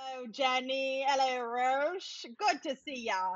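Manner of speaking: British accent with British English vowels. Greeting the interviewers while playing a role online: British accent. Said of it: "Rob, you sound British".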